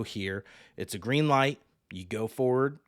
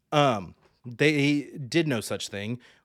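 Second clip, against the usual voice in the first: ordinary talk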